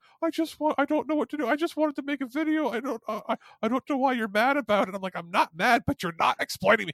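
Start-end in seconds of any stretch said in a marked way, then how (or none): 0.2-4.9 mock near tears, on verge of crying, pitched up. Retelling a phone call, the speaker quotes her, imitating someone almost crying. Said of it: "she starts like almost crying".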